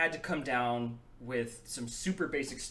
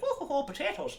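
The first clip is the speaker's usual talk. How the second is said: very high, exaggerated, over-the-top Irish accent. Explaining preparing an Irish accent, demonstrating the usual exaggerated Irish accent. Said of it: "I haven't really done an Irish accent".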